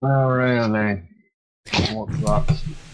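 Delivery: glum, downbeat, half-hearted, unenthused tone. A narrator voices a character answering a phone call, sounding down. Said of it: "don't sound so down on it".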